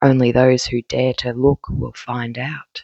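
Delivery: put-on cool delivery, trying to sound cool. Speaker tries out a line, then doubts how it sounded; cool voice. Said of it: "I was trying to have like a cool voice".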